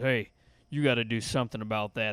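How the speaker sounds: low, deep, dropped voice. Retelling what the math teacher said to him, imitating his deep voice. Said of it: "It was a deep voice".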